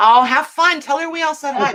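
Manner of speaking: loud, high-pitched yelling call. Speaker calls out to someone going out the door, calling out loudly. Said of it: "Did you hear me getting loud?".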